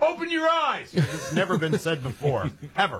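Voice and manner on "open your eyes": high, yelled heckling voice. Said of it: "I'm gonna tell this umpire".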